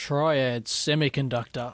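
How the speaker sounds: put-on radio announcer voice. Dave is asked to say the company name again in his radio voice; radio voice. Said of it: "that radio voice".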